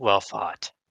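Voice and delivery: hushed, under-the-breath whispered words. Whispering to a defeated opponent while killing him: whispering. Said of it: "I just whispered".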